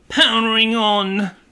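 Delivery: mock robotic device voice, British accent. Imitating a car transmitter's announcement: imitating a British device voice. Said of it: "I guess it's a British Bluetooth transmitter".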